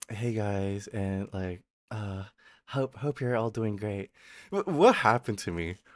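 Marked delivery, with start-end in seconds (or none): 0.1-4.1 gentle, quiet, soft-spoken voice. Acting out how they used to sound before: soft, quiet voice. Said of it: "I used to be so like so soft spoken. I used to be like".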